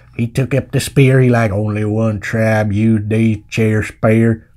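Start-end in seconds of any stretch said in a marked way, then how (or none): 1.6-4.4 put-on bad cowboy accent, pitched low. Retelling a story about dead cows, stupid John Wayne cowboy accent. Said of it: "That's me doing an impression of John Wayne through my stupid cowboy accent".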